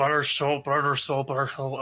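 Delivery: low, repetitive mutter, as if to oneself. Voicing a character studying a door inscription: muttering under his breath. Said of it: "repeating under his breath".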